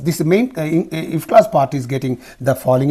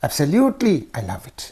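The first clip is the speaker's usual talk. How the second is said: eager rise-fall tune on "absolutely" and "love it"; 4 dB quieter than usual. Demonstrating intonation for expressing enthusiasm: expressing enthusiasm. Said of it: "expressing enthusiasm".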